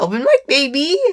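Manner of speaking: cracking voice that breaks and pitches up. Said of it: "my voice cracked again".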